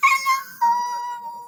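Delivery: very high, squeaky, drawn-out little mouse voice. Leading a group exercise, saying hello as high as possible: squeaky high hello. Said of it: "I was so squeaky".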